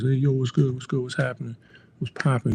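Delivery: quick-fire, fast New York accent. Explaining how a language finally made sense, the speaker imitates fast New York talk. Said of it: "New Yorkers will talk real fast".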